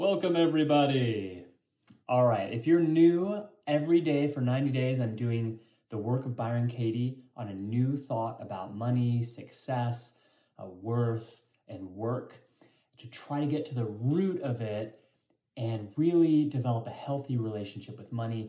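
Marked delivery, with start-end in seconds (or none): 0.0-3.4 high, booming circus ringmaster announcer voice. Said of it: "I'm speaking in my circus announcer voice".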